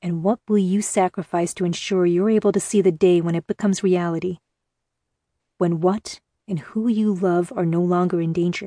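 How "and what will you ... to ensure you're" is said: usual speaking voice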